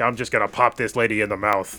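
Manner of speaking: 1950s hard-boiled gumshoe detective voice. Showing what an audiobook voice is known for, in a Rhett C. Bruno 1950s-style voice. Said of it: "almost like a 1950s style voice".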